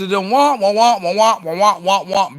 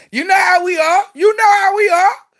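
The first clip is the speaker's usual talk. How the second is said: yelling, shouting, higher pitch; 11 semitones higher, 4 dB louder than usual. Explaining to the fellas how women react, yelling. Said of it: "let me stop yelling".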